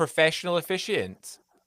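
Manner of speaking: stress on "professional".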